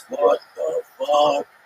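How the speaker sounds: very high, rough, loud barking voice. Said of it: "You just hear his voice".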